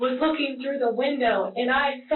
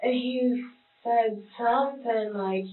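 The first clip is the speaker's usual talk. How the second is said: usual speaking voice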